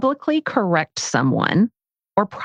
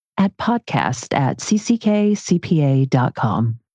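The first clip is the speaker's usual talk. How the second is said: put-on radio announcer-style voice; 3 semitones lower than usual. Asked by a co-host to repeat the email address, in radio announcer voice. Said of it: "I got my radio voice on".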